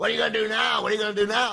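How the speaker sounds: mock very high, loud, jeering, taunting scream. Retelling a fight in a hallway: imitating someone screaming. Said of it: "kinda cross-facing him and screaming".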